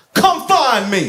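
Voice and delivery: mock high yell. Retelling a man who yelled from behind the bathroom door: retelling a yell. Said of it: "he yelled out right at the bathroom door".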